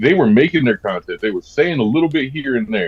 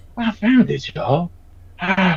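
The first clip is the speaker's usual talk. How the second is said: put-on funny breathless voice, pitched higher; 8 semitones higher than usual. Imitating a TikTok creator who was always out of breath: imitating a funny out-of-breath voice. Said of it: "he had that really funny voice".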